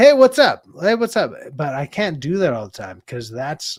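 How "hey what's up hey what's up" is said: shrill, very loud, high, full-throated shout. Speaker shows how he yells a greeting to someone, yelling. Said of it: "that's me yelling like".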